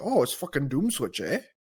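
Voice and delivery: put-on thick, laid-on Canadian accent. Retelling what a concert-goer said: strong canadian accent. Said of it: "fucking most Canadian accent ever".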